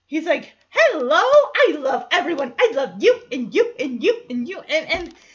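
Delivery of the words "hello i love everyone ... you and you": loud, bubbly, gushing, pure-energy delivery. Speaker acts out Joey coming in the door, imitating Joey's pure energy. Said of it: "he is pure energy".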